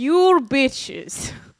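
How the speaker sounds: clumsy, badly done put-on Scottish accent. Reading a fan's email aloud, the speaker attempts a bad Scottish accent. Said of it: "I was trying to be Scottish".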